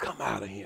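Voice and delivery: spoken barely above a breath.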